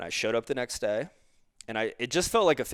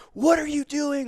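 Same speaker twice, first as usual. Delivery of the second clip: high-pitched, raised yell; 6 dB louder than usual. Retelling being yelled at in front of everyone, imitating someone yelling. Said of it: "Like yelling at me".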